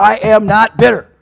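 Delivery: acted, very loud, slow, edgy delivery. Quoting people who deny being bitter, in a mock-edgy 'not bitter' voice. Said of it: "with a nice edgy voice".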